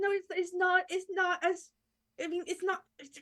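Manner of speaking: very high, stammering, begging, pleading voice. Playing a character who stammers a denial, looking toward Arya: pleading.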